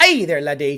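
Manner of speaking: put-on low Irish accent. After noting someone's first Irish accent, speaker greets in an Irish accent. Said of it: "We got an Irish accent from [name]".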